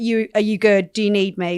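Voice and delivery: ordinary talk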